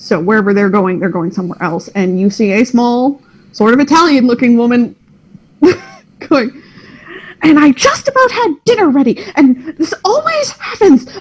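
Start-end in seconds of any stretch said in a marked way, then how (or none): 7.4-11.1 very high-pitched grousing, grumbling complaining tone. Narrator voices a woman the players see passing by, grumbling to herself. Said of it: "she's just grumbling to herself".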